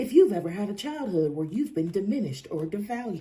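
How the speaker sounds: commercial announcer voice, narrator-style read. Rewording their own question to someone, deliberately in a drug commercial voice. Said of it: "Why do I sound like a drug commercial?".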